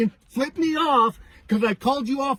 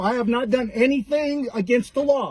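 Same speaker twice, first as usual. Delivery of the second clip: ordinary talk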